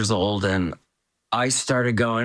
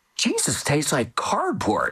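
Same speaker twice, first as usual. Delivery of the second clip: high, emphatic, animated voice with swooping tune; 5 semitones higher than usual. Speaker quoting what she said aloud: retelling a loud remark. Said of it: "she said very loudly".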